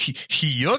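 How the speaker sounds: bad, high-pitched cartoon yuck laugh. Attempting a Goofy impression for the others, a Goofy laugh impression.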